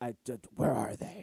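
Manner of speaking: low, quiet impression voice.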